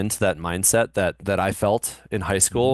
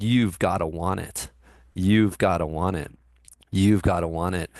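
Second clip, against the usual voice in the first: normal talking voice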